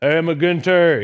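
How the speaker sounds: put-on Cajun accent. Imitating his youth ministry professor greeting him, Hooley Goddard's Cajun accent. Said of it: "I'm not going to do the accent anymore".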